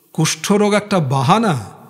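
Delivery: ordinary delivery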